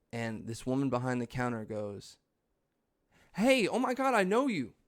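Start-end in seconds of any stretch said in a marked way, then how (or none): 3.3-4.7 very high, loud, gushing excited voice. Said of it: "like, with a lot of, like, excitement".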